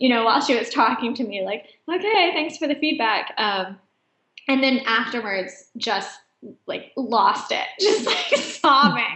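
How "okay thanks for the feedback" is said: mock holding back tears, much higher pitch. Speaker retelling their reply to a woman's criticism of their hair, imitating holding back tears. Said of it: "trying to hold it together".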